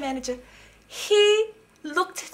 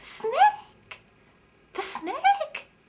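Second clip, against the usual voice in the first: squeaked out way up high; 13 semitones higher than usual. Telling a story in which the frog answers her question, in a squeaky Chubby Frog voice. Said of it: "Isn't it squeak?".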